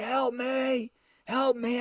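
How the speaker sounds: feeble, dry-mouthed, high cry, very slow and drawn-out. Retelling calling to a stranger across the street after an attack: imitating a weak yell for help. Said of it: "And I yell out".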